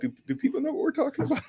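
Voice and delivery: very high, fast, laughing, disbelieving tone. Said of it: "I'm like".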